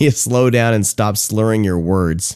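normal talking voice

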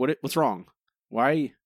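put-on voice of an alarmed pet dog. Retelling how the dog reacted to yelling at a video game: imitating alarmed dog Izzy. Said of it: "Izzy was alarmed".

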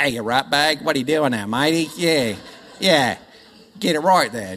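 clumsy, failed put-on Australian accent. Contrasting baby talk with how Australians speak to children: bad Australian accent. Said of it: "I can't do the accent".

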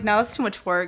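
plain

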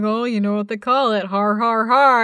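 put-on mocking jeer. Acting out someone mocking her as she installs it: imitating someone mocking her. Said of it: "someone's like".

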